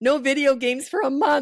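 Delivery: high, loud, overboard angry outburst, barked out. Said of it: "you're just going overboard".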